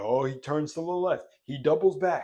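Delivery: TV sports commentator play-by-play voice. Retelling how the tv announcer called every move: imitating a sports announcer. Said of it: "the announcer would be like".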